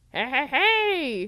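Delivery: bad, high, loud, drawn-out "hey"s. Doing a quick impression right after Babu Frick comes up: bad Babu Frick impression. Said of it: "That was a really bad Babu Frick impression".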